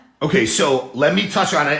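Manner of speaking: normal talking voice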